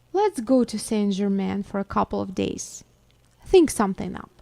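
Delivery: ordinary delivery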